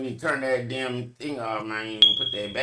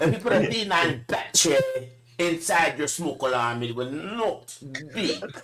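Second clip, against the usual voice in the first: Jamaican-sounding delivery; 4 semitones higher than usual. Explaining how to fix a beeping smoke alarm: Jamaican accent. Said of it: "you went Jamaican".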